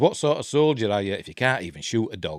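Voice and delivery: ordinary talk, nothing marked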